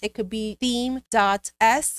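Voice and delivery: slow, careful wording. Tutorial host naming a theme file for viewers, said slowly. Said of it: "I have to say that slow".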